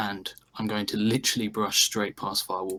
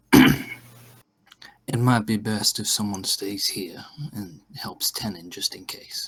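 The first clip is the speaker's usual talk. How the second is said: in-character voice, spoken aloud and raised; 6 dB louder than usual. In character, turning aside to Sindel, speaking quietly. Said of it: "I'll quietly say to Sindel".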